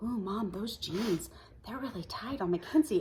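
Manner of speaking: soft speaking. Retelling what a daughter said quietly about tight jeans, imitating someone speaking quietly. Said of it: "she comes over to me quietly and she goes".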